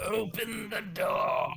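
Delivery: high, creaky, rough-edged ghostly android voice. Retelling a story, the speaker gives the ghost's line in an android ghost voice. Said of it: "I'm glad you imagined that voice just like that".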